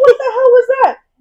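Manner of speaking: outraged yell.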